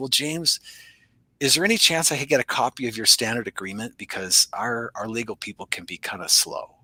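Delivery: voice dropped a little. Retelling what a guy asked james after looking around, retelling his lowered voice. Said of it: "he kind of lowers his voice a little bit".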